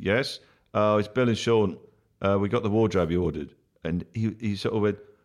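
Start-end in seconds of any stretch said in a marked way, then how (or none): none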